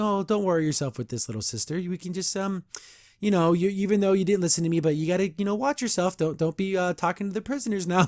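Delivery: sweetly menacing, falsely kind tone. Retelling a cartoon scene as the villain Horde Prime: nice but threatening. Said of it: "being super nice to her, but, like, in a threatening kind of way".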